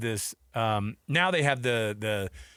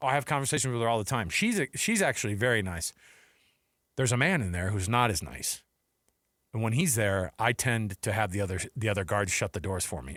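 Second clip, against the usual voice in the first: deadpan, flat, utterly casual, matter-of-fact delivery; 2 semitones lower than usual. Retelling what a security guard said about a haunted mansion: imitating a matter-of-fact tone. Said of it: "so freaking matter of fact".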